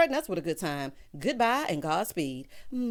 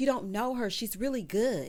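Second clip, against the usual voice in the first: normal talking voice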